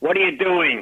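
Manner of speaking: gruff, rough-edged voice. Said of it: "in that gruff voice".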